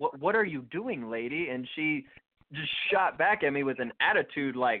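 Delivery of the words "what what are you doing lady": put-on stuttering, stammered delivery. Retelling a startled question to a stranger: imitating own stuttered question. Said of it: "stutter out".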